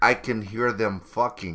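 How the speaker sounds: put-on speaking with a Chinese accent. Retelling what a man said after walking in: put-on Chinese accent. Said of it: "you know he has that Chinese accent".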